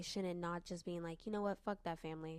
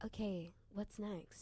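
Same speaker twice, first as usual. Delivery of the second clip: machine-like, flat robotic monotone, no inflection at all; 2 semitones higher than usual. Imitating the other girl, not the main one, reading stories: imitating robotic talking. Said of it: "talking very robotically".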